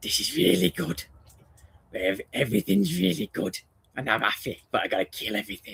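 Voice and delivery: soft, creaky, put-on talking dog voice. Voicing the dog Chief's thoughts while it lies nearby, doing Chief's voice. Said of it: "say it in his voice".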